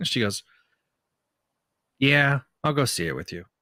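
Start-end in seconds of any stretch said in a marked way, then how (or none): 2.0-3.4 put-on deadpan, dry, matter-of-fact, no enthusiasm. Retelling a daughter's reply to a movie trailer: imitating Gabby's deadpan delivery. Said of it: "you didn't hear the deadpan".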